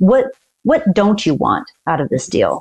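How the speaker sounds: ordinary talk, nothing marked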